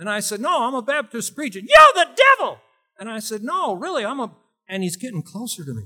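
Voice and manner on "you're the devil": put-on high, whiny child voice, much higher, louder. A Baptist preacher retells a kid confronting him: imitating kid's high whiny voice. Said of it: "He had this real high, whiny type voice".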